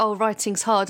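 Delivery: ordinary talk, nothing marked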